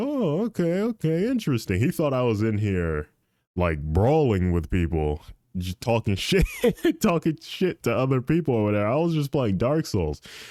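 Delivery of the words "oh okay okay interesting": high-pitched, unconvinced tone. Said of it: "He's like".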